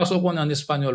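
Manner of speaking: ordinary talk, nothing marked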